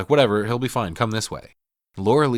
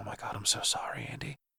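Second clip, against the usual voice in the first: barely audible, very soft, hushed whisper; 13 dB quieter than usual. Retelling a movie scene where a girl mourns her brother: imitating a quiet whisper. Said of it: "she quietly whispers".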